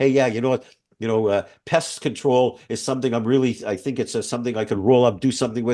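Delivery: ordinary delivery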